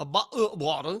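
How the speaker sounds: attempted English accent. Asked to try an english accent, the speaker gives an attempted english accent. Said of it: "Can you try an English accent for me?".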